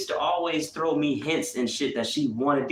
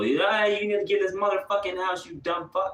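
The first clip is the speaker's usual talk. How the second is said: put-on drunken angry old man cursing, higher; 5 semitones higher than usual. Retelling how a drunk grandfather cussed out the kids: imitating drunken angry cursing. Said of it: "cussing the little kids out".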